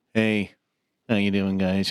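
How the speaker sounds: flat, deadpan monotone held on one note. Describing a cartoon character to another speaker, monotone Bird Person voice. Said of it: "he's very monotone".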